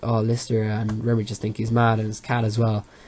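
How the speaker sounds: ordinary delivery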